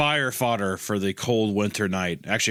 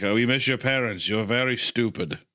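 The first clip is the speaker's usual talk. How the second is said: put-on, fake Transylvanian accent; 3 semitones higher than usual. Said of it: "They all had a distinct Transylvanian accent".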